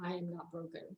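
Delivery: very soft, quiet, unconvinced delivery. Showing a mantra said without conviction: unconvinced delivery. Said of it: "Does that sound like I'm convicted".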